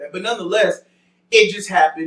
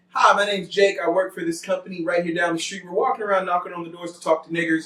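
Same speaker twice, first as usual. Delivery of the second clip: ordinary delivery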